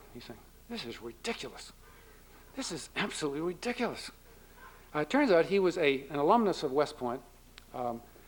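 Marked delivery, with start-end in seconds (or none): 0.7-4.1 half-whispered, hushed, breathy muttering. Retelling what a man off to your left was saying, muttering. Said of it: "He's muttering".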